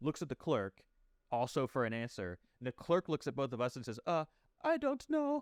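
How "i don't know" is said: tiny mousy squeak, very high and slow. Retelling a store clerk's answer to you and a customer, little mousy voice. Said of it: "I give him a little mousy voice".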